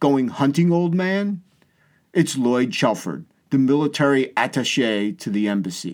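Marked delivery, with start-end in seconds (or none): 0.0-1.4 put-on very marked British accent, pitched up. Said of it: "Lloyd had a very distinctive British accent".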